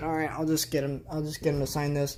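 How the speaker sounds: normal talking voice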